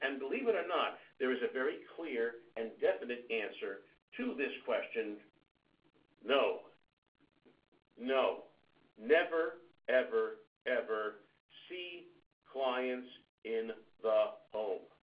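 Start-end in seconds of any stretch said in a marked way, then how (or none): 6.2-14.8 very slow, deliberate, drawn-out emphasis. Speaker repeating the answer so all listeners can understand, very slow. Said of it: "I said that very slowly".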